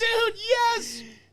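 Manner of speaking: very high, loud, thrilled excited cheer. Retelling own reaction to praise from a wrestler: own excited fan outburst. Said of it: "but I did mark out".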